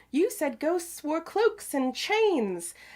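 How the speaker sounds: put-on very high little British boy accent. Recounting a little boy's line from a clip, british kid accent. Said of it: "was that a good little like British kid".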